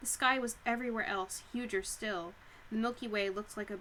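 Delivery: ordinary delivery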